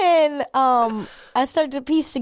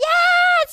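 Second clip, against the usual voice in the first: crowd cheering. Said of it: "people were like".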